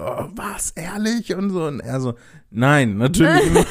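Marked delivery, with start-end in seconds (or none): 0.0-1.6 high, super-excited, bursting with excitement. Speaker retelling their own first reaction to a new world of possibilities: acting out past super excitement. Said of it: "ich war so super aufgeregt".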